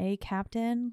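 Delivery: mock sweet friendly tone. Retelling how Maurice lures her out of hiding: imitating Maurice being sweet. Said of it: "trying to lure her out by being sweet".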